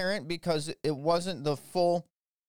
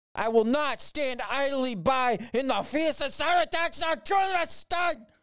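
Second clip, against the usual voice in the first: irate, pissed-off, put-on German accent; 8 semitones higher than usual. Reading news on Biden's cyber response, then doing a mock-angry German impersonation. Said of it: "that was my pissed off German impersonation".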